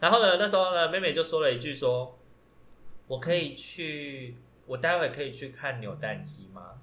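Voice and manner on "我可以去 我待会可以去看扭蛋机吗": thin, small, soft, slow kitten-like voice. Retelling a quiet coworker asking to leave: imitating a small cat-like voice. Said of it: "就是有一点那种猫的那种小声的声音".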